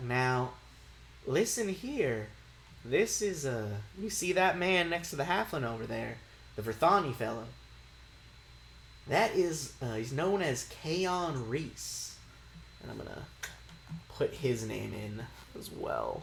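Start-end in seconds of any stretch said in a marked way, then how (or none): 0.0-12.2 secretive, conspiratorial, confiding tone. Voicing a character who leans in to point out a stranger: conspiratorial. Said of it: "she leans in kinda conspiratorially".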